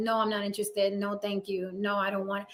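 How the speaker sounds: mock deadpan, icy, flat, cold. Retelling how men who ask are turned down: imitating own cold refusal. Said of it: "So I have to be very cold about it".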